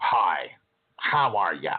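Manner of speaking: snooty, stuck-up, low and drawn out. Showing how emotions carry in the voice, first example greeting in a snotty tone. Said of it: "the first example was kind of snotty".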